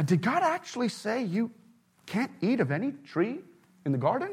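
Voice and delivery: soft, astonished, incredulous tone. Retelling the question put to the woman in the garden, mock-surprised and incredulous. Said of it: "In a surprised and incredulous tone".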